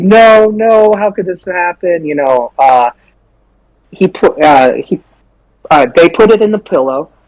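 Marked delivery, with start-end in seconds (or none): 0.0-2.0 put-on distressed cry of disbelief, held in. Retelling seeing the body pillow pulled out: imitating own past screaming. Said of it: "I'm screaming at this point".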